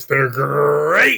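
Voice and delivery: "great" dropped deep and drawn out. Showing another speaker how to do the voice: deeper Tony the Tiger voice. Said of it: "You gotta go deeper, Brian".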